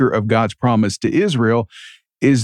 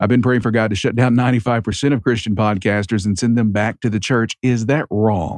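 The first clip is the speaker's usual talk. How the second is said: ordinary talk, nothing marked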